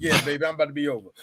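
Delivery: casual, relaxed phone-style conversational voice. Acting out a boxer calling his girlfriend after walking out: acting out Apollo Creed on the phone.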